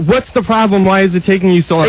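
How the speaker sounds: plain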